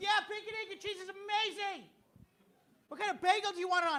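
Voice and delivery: mock very high, overjoyed, eager gushing chirp. Retelling ordering breakfast from a counter worker: imitating an excited cashier. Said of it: "just so excited to take my order".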